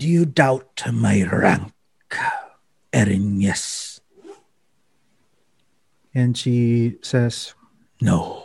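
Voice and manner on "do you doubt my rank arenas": hellish bone devil voice, challenging and demanding. Game narrator voicing the bone devil addressing the Erinyes: [name] bone devil voice. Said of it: "I am [name], and I am the bone devil of the heart grove." / he kind of like grabs inside from his robe".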